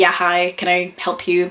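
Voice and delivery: imitated unfazed, nonchalant woman's voice. Retelling a film scene where Cypher meets an intruder: imitating Cypher, unfazed. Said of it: "She's not fazed at all".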